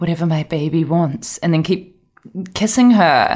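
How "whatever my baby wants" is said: soft, hushed, ear-close stage whisper. Retelling what Travis half-whispers to her on the show: imitating Travis half-whispering. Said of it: "he'll just whisper into her ear and be like".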